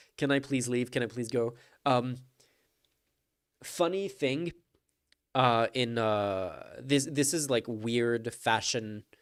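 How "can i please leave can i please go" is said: put-on pleading voice. Mocking a politician in a clip, imitating Marco Rubio pleading. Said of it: "Marco Rubio there, just like".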